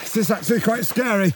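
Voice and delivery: laughing, slightly panicked. Tangled while struggling to stay afloat, laughing to ward off panic: saying it with a laugh. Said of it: "I'm saying it with a laugh".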